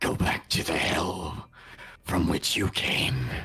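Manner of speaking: deep, low-pitched voice. Storyteller voices a woman speaking as she casts a spell, in a deep voice. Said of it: "She would have been in that deep voice".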